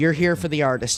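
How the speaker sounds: plain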